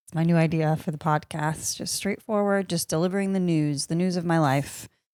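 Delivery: deadpan, flat monotone delivery with no inflection at all. Podcast host opening an episode in her new delivery style, flat monotone. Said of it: "I'll be speaking like this and monotone".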